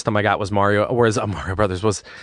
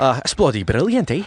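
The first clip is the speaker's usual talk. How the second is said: light, slight put-on brogue accent; 3 semitones higher than usual. Talking about British slang, the speaker slips into a light put-on brogue. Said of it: "That was a little Irish there".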